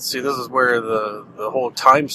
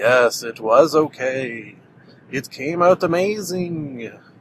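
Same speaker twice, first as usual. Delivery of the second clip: accent from Transylvania. Joking as a message from the future: put-on Transylvania voice. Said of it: "why I did the Transylvania voice".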